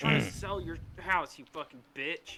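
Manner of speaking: furious, pissed-off, angry outburst. Asking a co-host whether they yell back at angry people on the phone, mock-angry. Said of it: "Do you get super pissed off and go".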